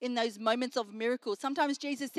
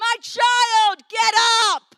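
shrill, very loud, high, full-force commanding yell; 9 semitones higher, 12 dB louder than usual. Retelling how he takes the daughter by the hand and speaks; retelling a yell.

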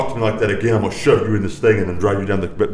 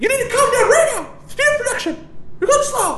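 squeaky voice, pitched way up high. Imitating a man urging workers to speed up, in a Mickey Mouse voice. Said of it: "that was straight up Mickey Mouse".

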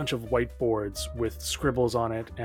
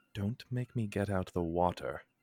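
whispering under the breath; 3 semitones lower, 4 dB quieter than usual. Threatening a paper messenger figure in character: whispering under breath. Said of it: "whispers just under their breath".

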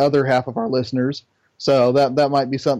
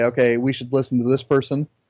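ordinary talk

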